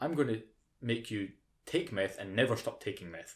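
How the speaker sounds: ordinary talk, nothing marked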